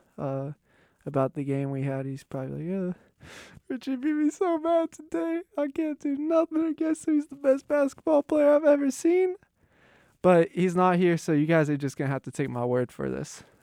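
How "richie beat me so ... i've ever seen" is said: very high, weepy, tearful sobbing voice. Imitating a beaten basketball opponent after the game: imitating Amon crying. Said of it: "He'd probably start crying, get a little emotional".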